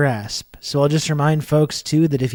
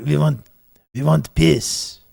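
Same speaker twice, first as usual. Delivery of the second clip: growly voice in a Ukrainian accent. Asked to say a line in the Zelensky voice, using a Ukrainian accent. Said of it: "I said peace, but I was doing an accent. I was just doing a Ukraine".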